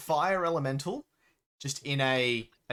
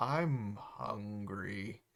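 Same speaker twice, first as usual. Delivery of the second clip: slow, low, dragged-out, lumbering plodding monster voice; 5 semitones lower, 7 dB quieter than usual. In the game, the earth elemental stands up and speaks: hungry earth elemental voice. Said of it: "stands up very slowly. He's like".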